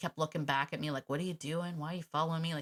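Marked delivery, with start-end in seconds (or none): 1.1-2.5 confused, puzzled, questioning dog voice. Retelling a dog looking back while being followed: voicing a confused dog. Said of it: "he was kinda confused".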